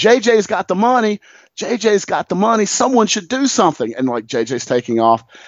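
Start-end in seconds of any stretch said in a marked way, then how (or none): 0.0-3.9 high, urgent yelling from a distance. Recounting a man behind him yelling in his ear: retelling a man yelling. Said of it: "And he starts yelling".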